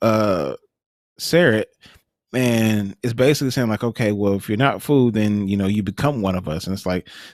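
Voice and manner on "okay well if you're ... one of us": normal talking voice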